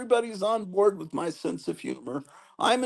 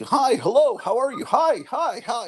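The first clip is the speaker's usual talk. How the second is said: put-on several fussy old people voices chattering; 5 semitones higher, 3 dB louder than usual. Mocking how the comment section sounds: mocking old people chatting. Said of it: "sounds like a bunch of old people".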